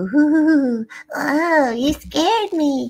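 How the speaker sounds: tiny spooky ghost, high, very slow, long ooh. Recalling an early voice-acting job, performing a little ghost voice. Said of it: "voices of like a little ghost".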